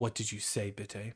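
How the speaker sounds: voice brought down low. Game narrator voicing a character who asks another a question, lowered voice. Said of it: "And he's gonna lower his voice".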